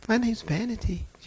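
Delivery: sweet, demure little lady's voice. Retelling a demon speaking through a lady: imitating a demon's sweet demure voice. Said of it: "She sounded just as sweet and demure".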